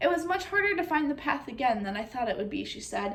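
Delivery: ordinary delivery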